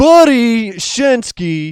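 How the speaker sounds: exaggerated dumb American accent, very loud and high. Told to say the name like a dumb American, saying it in a dumb American accent. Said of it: "say it like a dumb fuck American".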